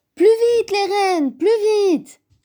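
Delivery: very high-pitched, piping shouted cry. Narrator reading a children's story aloud, the little bear character shouting. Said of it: "Criait Petit Ours".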